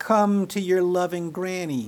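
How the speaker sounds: put-on shrill, high, shrieking old witch voice. Narrator voices the old witch calling the narrator to her: shrill old witch voice. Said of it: "the old witch shrilly said".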